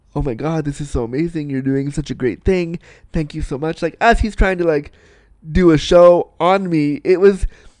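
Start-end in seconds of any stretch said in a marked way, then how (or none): 0.2-3.9 hushed half-whispered stage whisper. Retelling what the guy said during the lap dance: imitating someone half-whispering. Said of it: "he's whispering things to me like".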